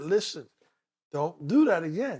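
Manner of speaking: ordinary delivery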